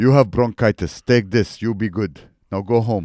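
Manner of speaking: old Eastern European doctor impression. Retelling a doctor's visit, imitating Romanian or Russian doctor. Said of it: "She's like an old Romanian or Russian doctor".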